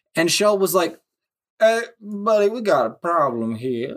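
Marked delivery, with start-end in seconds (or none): 1.6-3.9 put-on heavy deep South accent, very southern voice. Retelling how the company Shell reacted to the oil problem in Cuba, Colonel Sanders southern voice. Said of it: "as being a deep southerner".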